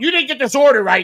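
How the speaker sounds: mock screaming. Retelling being yelled at over an order, retelling a scream. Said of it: "they're screaming at me".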